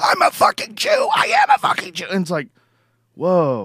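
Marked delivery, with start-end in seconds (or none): 0.0-2.1 raw hoarse scream, very high pitch. Retelling a man screaming at a guy who questioned him, imitating hoarse screaming. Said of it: "He's screaming at the guy with his hoarse voice".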